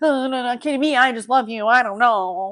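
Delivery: put-on stuttering. Imitating a show character who stutters through the whole show, imitating a stutter. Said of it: "he's like stuttering".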